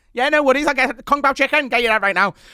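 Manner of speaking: put-on very high, quick, rattled-off, thick Liverpool accent. Retelling how a chip shop worker in Liverpool talks: thick, fast Liverpool accent. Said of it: "It's so thick and fast".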